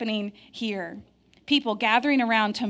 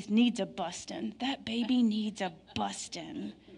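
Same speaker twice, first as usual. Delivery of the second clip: slow words forced out through gritted teeth; 7 dB quieter than usual. Retelling what Matt's aunt says of every baby she sees: imitating Aunt Mary Gail, gritted teeth. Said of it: "she says it like this through gritted teeth".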